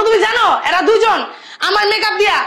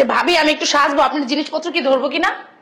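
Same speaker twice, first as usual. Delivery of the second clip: ordinary delivery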